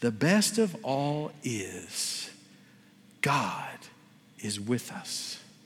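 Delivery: weak dying voice, slow, soft, barely audible.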